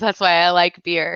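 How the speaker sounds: normal talking voice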